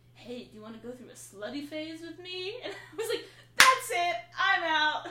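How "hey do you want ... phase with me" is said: hushed, soft, half-whispered voice. Retelling what a man she met half-whispered to her: retelling a half-whisper.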